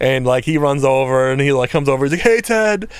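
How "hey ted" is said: very high-pitched voice. Retelling a friend saying hi into the mic: imitating a friend's higher-pitched voice. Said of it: "his voice is much higher pitched".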